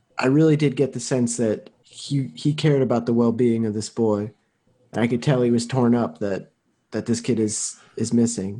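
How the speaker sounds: volume dropped a little, soft and low. Voicing a character who leans in close to confide: speaking at a lower volume. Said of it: "a little bit of a lower volume".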